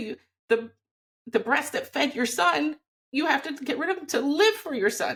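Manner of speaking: emotion welling up mid-sentence, overcome. Speaking about a painful personal experience, emotional. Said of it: "I get so emotional".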